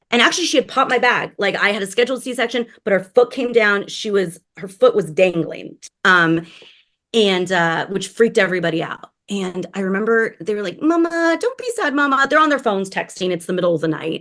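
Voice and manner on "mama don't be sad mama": put-on very high, talking-to-an-infant baby talk voice. Retelling how nurses spoke to a weeping patient: imitating nurses' baby talk. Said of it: "all the nurses talk to you like you're a baby".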